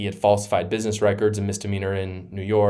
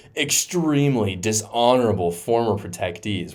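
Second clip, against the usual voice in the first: normal talking voice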